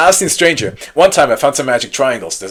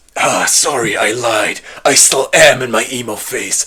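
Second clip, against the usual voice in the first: clearly fake put-on bass voice. Narrating a game scene where the teen answers: obviously fake deep voice. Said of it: "in an obviously fake, deep voice".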